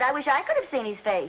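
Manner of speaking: could stressed, even pace. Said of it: "Come to think of it".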